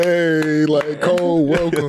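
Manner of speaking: mock slow, dripping sarcasm. Retelling how teammates greeted a late teammate on the plane: retelling a sarcastic greeting. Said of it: "But we being sarcastic".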